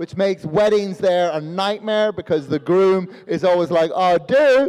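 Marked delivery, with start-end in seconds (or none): 3.9-4.7 oh, with do rising in pitch. Imitating a groom at a wedding: oh, do rising like a question. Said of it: "it always goes up at the end. It always sounds like they're asking a question".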